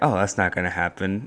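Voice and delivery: ordinary talk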